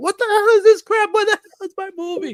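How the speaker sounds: very high, very loud, shrill, furious angry yelling. Retelling how the father reacted to a taped-over movie: imitating someone cursing angrily. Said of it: "all you hear is him cursing out".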